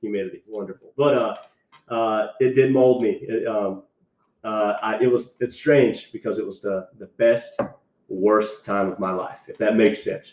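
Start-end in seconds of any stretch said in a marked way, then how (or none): 0.0-0.9 dry sarcastic tone, meaning the opposite. Describing recruit training to another speaker: sarcastic. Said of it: "I'm picking up the sarcasm right now".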